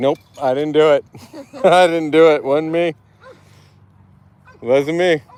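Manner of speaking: voicing a dog. Speaking for the dog who worries about getting in trouble: voicing the dog's thoughts. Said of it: "When he gets loud, he's like".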